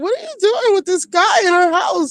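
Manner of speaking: mock, very high-pitched, frantic freak-out outburst. Retelling how a castmate caught a man leaving: imitating someone freaking out. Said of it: "flipping the fuck out".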